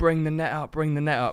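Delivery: put-on high shout, calling out at a distance. Retelling calling to a friend with a net: retelling a shout. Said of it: "so I'm shouting to him".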